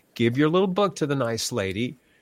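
ordinary talk

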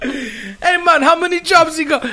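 put-on, very high, shrill, booming Jamaican accent. Urged by the others to follow through, the speaker does a reggae accent. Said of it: "Follow through with your reggae accent".

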